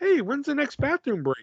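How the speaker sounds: little, small, high, cartoonish character voice. Retelling how she asked him about the next bathroom break, little Lucy voice. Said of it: "she comes up in her little Lucy voice".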